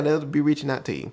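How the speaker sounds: normal talking voice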